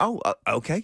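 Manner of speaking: ordinary talk, nothing marked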